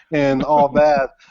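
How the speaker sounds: ordinary delivery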